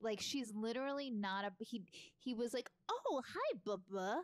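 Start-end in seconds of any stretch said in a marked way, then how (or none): 2.9-4.2 breezy, oblivious, surprised tone. Retelling how the husband greets her on the show: imitating the husband's greeting. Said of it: "That was a great impression".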